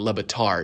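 stress on final syllable -tard of Lebatard. Retelling how mom kept saying his name: stress on last syllable of Lebatard. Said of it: "she would emphasize the last syllable".

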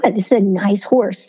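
ordinary talk, nothing marked

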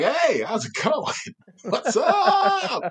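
living mannequin voice, very high and very slow. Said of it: "looked like a mannequin came to life and just started talking to people like".

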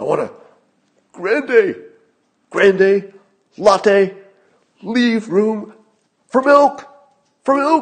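angry shouting, very high and very loud. Imitating Joe Biden ordering coffee, talking more angrily the less he says. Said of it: "And Joe Biden would be like".

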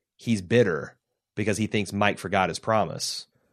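plain

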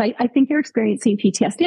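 plain

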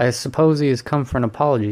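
ordinary delivery

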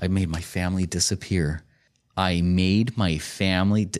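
ordinary delivery

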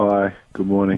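sounding slightly down, a little depressed. Welcomed onto his own show, answering the morning greeting, a little depressed. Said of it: "You sound a little depressed".

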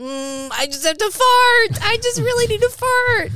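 acted, very high, loud moan. Retelling what a friend said: imitating him moaning. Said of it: "he's like moaning".

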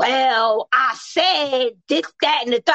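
delivery dripping with attitude. Imitating how a partner talks when explaining things: imitating someone with attitude. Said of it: "I don't need the attitude with it".

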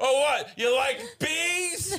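high, drawn-out, jeering, heckling scream. Acting out screaming at players during a game, as a joke: mock screaming. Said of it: "I wanna start screaming at them".

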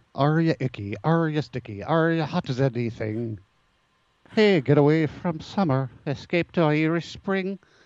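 put-on lazy, no-effort, high, slow stage Irish accent. Quoting an old soap commercial: Irish Spring commercial Irish voice. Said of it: "Irish people must hate me right now".

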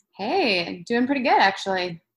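bright, upbeat, chipper, swooping tone. New guest answers the host's welcome on the show, chipper. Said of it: "You sound chipper".

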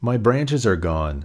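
plain

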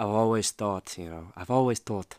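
clumsy, faltering, bad put-on Irish accent. Quoting a fighter from his documentary: imitating an Irish accent badly. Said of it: "that Irish accent, I can't do it well".

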